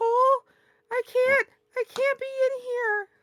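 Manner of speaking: calling out loudly. The speaker says they'll yell out to Cole, then does it: yelling out. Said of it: "and I'll just yell out".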